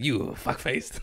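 put-on smiling growl. Retelling an acting class told to get angry: imitating a smiling growl. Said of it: "smiling, growling".

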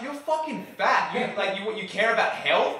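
high-pitched scream. Retelling an argument, the speaker re-enacts yelling back at a woman: retelling screaming back at someone. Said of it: "screaming back at this woman".

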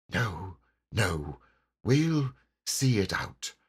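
whispering. The rat answers the mole in the dark: whispered. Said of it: "whispered back the rat".

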